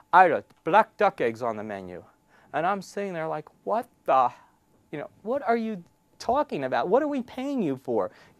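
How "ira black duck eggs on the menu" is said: put-on thick Russian accent laid on heavily, low, loud. Retelling a phone call, the speaker quotes the caller's first words in a thick Russian accent. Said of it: "thick Russian accent".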